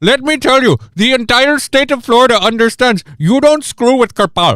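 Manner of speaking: dub-style Indian accent, voice-acted. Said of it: "voiced by, like, Bollywood".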